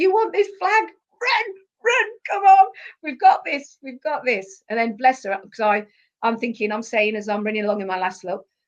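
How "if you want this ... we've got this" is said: put-on very high, loud, all-out rallying scream. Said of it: "I just remember screaming that".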